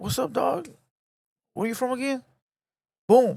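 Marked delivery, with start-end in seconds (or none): 0.0-2.2 casual, friendly, pitched-up tone. Showing one way a person can be asked where they're from: imitating a friendly greeting. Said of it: "The friendly way".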